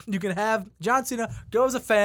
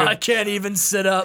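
plain

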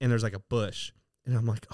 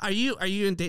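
mock screaming, much higher; 8 semitones higher than usual. Recounting being chased, quoting someone screaming at her: retelling someone screaming.

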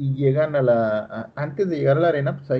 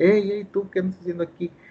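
high-pitched yell, easy and unforced; 6 semitones higher than usual. Retelling how a wrestler in the locker room called out: retelling a yell. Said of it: "empieza a gritar".

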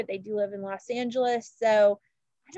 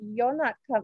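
horrible, put-on British accent. Retelling what Charlotte said to the press, in a horrible British accent as Charlotte. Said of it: "that's a horrible British accent".

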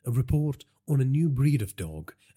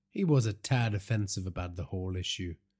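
plain

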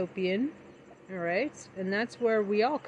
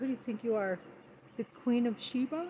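put-on motherly voice; 5 dB quieter than usual. Retelling a mother's saying again, imitating Mama G. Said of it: "That's kinda like it".

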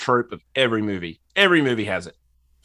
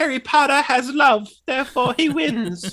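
very high, tiny elf-like creature voice. Speaker makes a point during a movie discussion, in a Dobby voice. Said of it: "Good Dobby impression".

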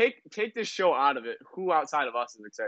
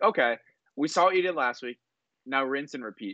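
usual speaking voice

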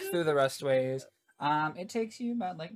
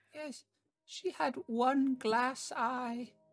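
put-on old fish-woman voice, higher, quieter; 8 semitones higher, 7 dB quieter than usual. Playing an older fish-person woman asked about her grandmother, in an older fish-woman voice. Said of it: "An older Lokatha woman, like a fish person".

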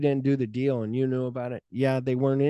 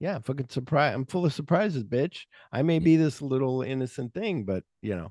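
ordinary talk

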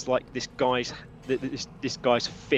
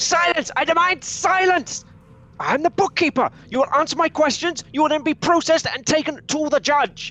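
put-on enraged old man's yell, very high, shrill, loud; 7 dB louder than usual. Voicing an old bookkeeper who slams his fist on the table: furious shouting old man. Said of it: "slams his fist down on the table and says".

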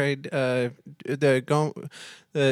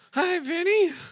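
put-on woman's voice, pitched very high. Calling vinny on the phone, greet him in a put-on lady voice. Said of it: "Doing the lady voice".

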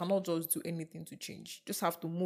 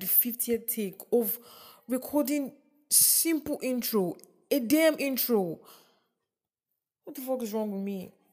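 exasperated, frustrated, pitched-up ranting delivery; 5 semitones higher than usual. Complaining about the fiftieth failed take of an intro: frustrated. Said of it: "I'm so frustrated".

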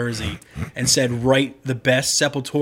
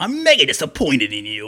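animated put-on character voice, pitch swooping all over. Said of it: "adding in the [name] voice".

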